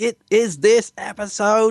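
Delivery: very high, very slow alien voice, words stretched out. Teasing the other speaker about their earlier line: Dalek voice. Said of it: "You almost went a bit Dalek there".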